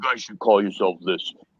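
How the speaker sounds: super deep voice. Retelling a man showing them a catalog and suggesting a name; super deep Green Giant voice. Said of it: "he says in his fucking super deep voice, a green giant voice".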